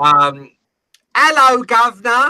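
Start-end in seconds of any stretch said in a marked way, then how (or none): 1.2-2.3 very high, very loud, shrill fake British accent. Mimicking an American imitating a British person, fake British accent. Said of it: "That's my impression of an American doing an impression of a British person".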